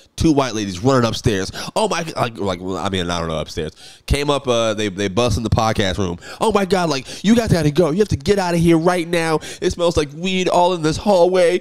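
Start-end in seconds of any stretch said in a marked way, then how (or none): 6.5-11.7 mock angry woman's voice, high-pitched. Retelling a woman bursting in to order them out: imitating an angry woman. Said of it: "directing her anger".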